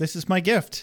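very calm, level, unbothered, matter-of-fact. Retelling a dream scene where Buffy smothers Dawn: imitating Buffy, calm and matter-of-fact. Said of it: "Very calmly. And matter-of-factly".

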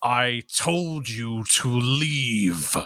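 booming, very slow, drawn-out voice. A character who usually speaks small suddenly addresses you, in a booming voice. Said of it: "It kind of booms out over the room".

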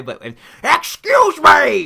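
put-on angry sneeze. Hosts recapping an episode, quoting Pierce's reaction: Pierce's mock-angry sneezed 'excuse me'. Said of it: "Sneezes out his angry response".

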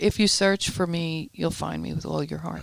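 usual speaking voice

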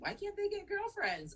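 put-on very high, innocent child voice. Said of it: "what's her name's like".

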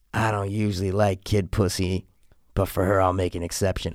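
whisper. Retelling a movie scene where a man whispers in a girl's ear: imitating a whisper. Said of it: "he whispers in her ear".

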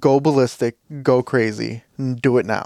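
normal talking voice

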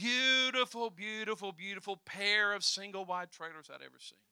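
loud, heavy, laid-on sarcasm. Describing the view across from their apartment to listeners, sarcastic. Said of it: "I pray you're hearing the sarcasm in my voice".

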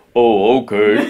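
bottomed-out, ultra deep bass register. Retelling how his wife imitates him: imitating an ultra deep voice. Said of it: "They assign me this ultra deep voice".

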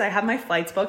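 ordinary delivery

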